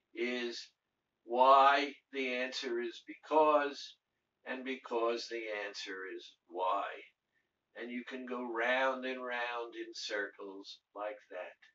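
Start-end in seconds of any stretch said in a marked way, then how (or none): none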